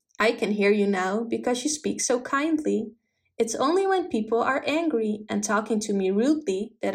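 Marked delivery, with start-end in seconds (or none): none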